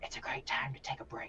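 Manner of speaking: very quiet hushed whisper. Game master voices a character who looks around before speaking to a player, lowered voice. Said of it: "lowers his voice as he says to you".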